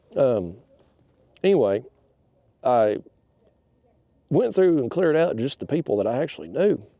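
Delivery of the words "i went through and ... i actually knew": words caught in a choked throat, choking. Talking about clearing out friends list, choking on saliva while talking. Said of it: "Still choking on it".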